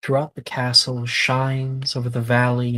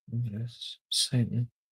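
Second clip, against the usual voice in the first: faint, barely audible half-whispered mutter under the breath; 9 dB quieter than usual. Voicing a character muttering to himself as a player approaches: half-whispering. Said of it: "So quiet, like a whisper".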